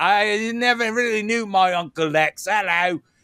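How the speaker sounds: poor put-on Australian accent.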